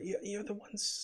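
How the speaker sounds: hushed, barely audible whisper. A passing woman speaks to the newcomers in the street, whispering. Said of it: "she whispers".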